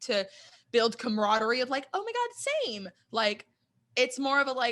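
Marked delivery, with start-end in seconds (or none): 1.9-2.9 rude, squeaky, very high voice. Retelling what a contestant said about orchids: rude Victoria imitation voice. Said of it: "my Victoria imitation voice is really rude".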